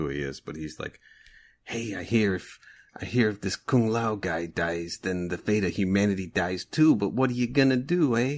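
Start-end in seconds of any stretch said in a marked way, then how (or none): 1.6-8.4 weird, quirky, put-on New York accent. Imitating a hooded character's way of talking: imitating a weird New York accent. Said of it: "a weird New York kind of thing".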